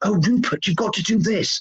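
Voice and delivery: put-on sly whisper. Picturing a young adviser sidling up to Rupert: imitating Connor Tomlinson whispering. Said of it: "sidling up on his knee and whispering in his ear".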